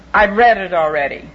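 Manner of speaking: put-on grumpy, cross-sounding, grouchy voice. Retelling a man's reply to an offer of the morning paper, imitating a grouchy reply. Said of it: "he said in his most grouchy voice".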